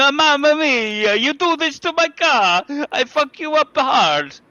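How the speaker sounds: put-on Italian accent, high, slow, words drawn out. Imagining what a show contributor was saying while making gestures: put-on italian accent. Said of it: "was my best Italian".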